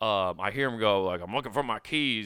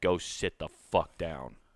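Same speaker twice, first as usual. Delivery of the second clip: mock stern, no-nonsense, angry and firm; 5 semitones lower than usual. Retelling ordering a drunk man to sit down: imitating own angry command. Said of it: "Like that, too".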